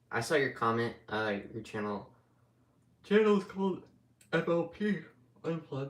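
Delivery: speaking through a yawn. Replying to someone's comment about their channel, yawning while talking. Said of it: "Sorry if I'm yawning".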